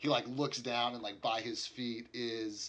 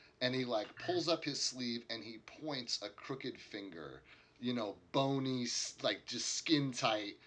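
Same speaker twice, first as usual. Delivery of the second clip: plain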